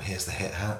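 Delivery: put-on flat voice. Co-host mimics how the other host handed over the hat, dead straight voice. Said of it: "said it in a sort of dead straight voice".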